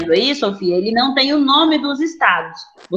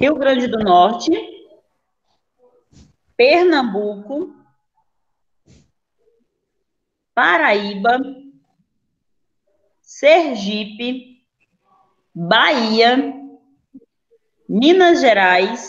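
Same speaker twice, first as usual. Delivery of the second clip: slow, deliberate, carefully paced delivery. Repeating the names for a student checking his list, speaking more slowly. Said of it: "mais devagar".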